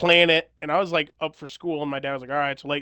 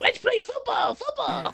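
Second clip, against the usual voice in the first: put-on little kid voice, higher; 3 dB quieter than usual. Imitating how a friend talked as a kid: Bobby Hill voice. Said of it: "he was always talking like".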